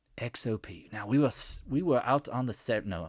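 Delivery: put-on Australian accent laid over the letters. Talking while trading, the speaker says a ticker in an Australian accent. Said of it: "Let's do the X O P in an Australian accent".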